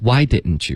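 heavy stress on "why", rest of words lighter. Teaching sentence stress in why didn't you, stress on why. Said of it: "重音是Why".

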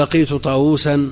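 normal talking voice

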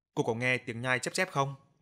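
ordinary delivery, nothing marked

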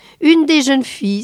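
high exclamation in sheer astonished surprise. A mother, hearing her son likes only one of the girls: astonished exclamation. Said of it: "s'exclama-t-elle étonnée".

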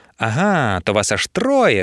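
sneering, taunting, slow mocking drawl. Narrator reads Adolfina answering three girls who each claimed it: mocking. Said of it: "насмішкувато проказала Адольфина".

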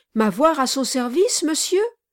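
startled, surprised outcry, cut off short. A young man on a ladder turns around at what he is told, exclaiming. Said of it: "s'écria Kit".

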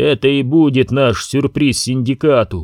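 plain reading voice

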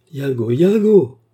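loud crying out. The narrator, feeling his strength fade, cries out a name: crying out. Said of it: "m'écriai-je".

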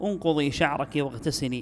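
usual speaking voice

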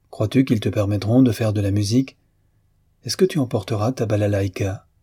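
plain

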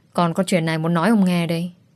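ordinary delivery

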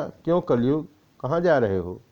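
plain reading voice

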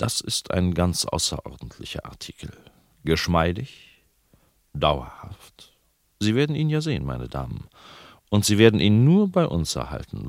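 ordinary talk

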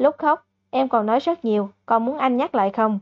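plain

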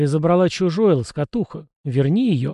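plain reading voice

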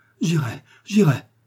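high, terrified crying out. The wounded man, threatened by D'Artagnan, answers with a terrified cry. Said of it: "s'écria-t-il, reprenant courage à force de terreur".

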